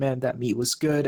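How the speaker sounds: ordinary talk, nothing marked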